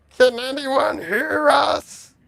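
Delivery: very high shouted call. Recounting a game scene to the group, imitating Malari yelling. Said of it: "That's what Malari's yelling".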